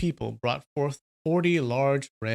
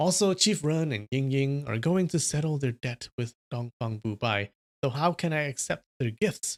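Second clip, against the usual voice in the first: ordinary delivery, nothing marked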